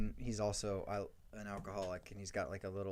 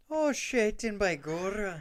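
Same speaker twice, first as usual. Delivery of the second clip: exaggerated Irish cop voice; 12 semitones higher, 10 dB louder than usual. Retelling what an irish beat cop character says, in a stereotypical irish cop accent. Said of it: "He's like the stereotypical like Irish cop".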